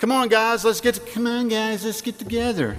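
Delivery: high, mocking schoolyard singsong. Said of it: "I still do that to my kids".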